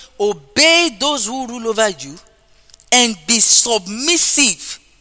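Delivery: measured, slow, deliberate reading aloud, word by word. Preacher rereads a Bible verse aloud to listeners: reading scripture slowly. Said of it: "I'll read it slowly".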